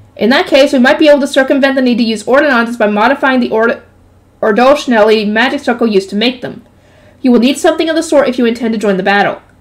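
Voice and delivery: plain reading voice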